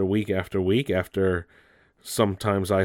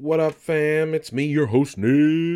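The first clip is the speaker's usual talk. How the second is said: 90s radio disc jockey voice; 8 semitones higher than usual. Host opening the news show talks like a 90s disc jockey. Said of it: "I'm talking like a disc jockey out of the 90s".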